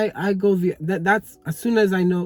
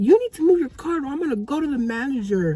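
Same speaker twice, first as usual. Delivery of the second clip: exasperated, frustrated, pitched-up raised voice edging toward yell; 7 semitones higher than usual. Retelling what a frustrated woman said to them, retelling a raised voice. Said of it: "but like raising her voice".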